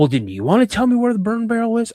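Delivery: mock, pointed accusing tone, high and swooping. Retelling an argument about the burn barrel, the speaker is imitating dad's accusing tone. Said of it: "kind of accusing me".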